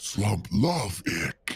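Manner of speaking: put-on low, quiet mumble. Speaker shows how Slump, the character he wants to be, sounds: Slump's slow mumble. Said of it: "slow mumble like he's talking to himself".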